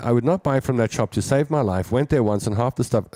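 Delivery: ordinary talk, nothing marked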